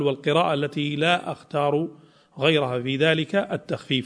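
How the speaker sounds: ordinary talk, nothing marked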